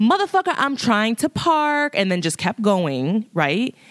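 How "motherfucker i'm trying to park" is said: shrieked, very high screaming. Retelling screaming back at another driver: retelling own scream. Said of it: "I just screamed back with him".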